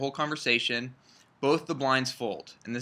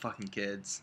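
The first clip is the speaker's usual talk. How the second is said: put-on muttered tone, lower and quieter; 5 semitones lower, 12 dB quieter than usual. Retelling a poker player's reaction at the table: imitating Phil Ivey mumbling under breath. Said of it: "kinda mumbles under his breath a little bit".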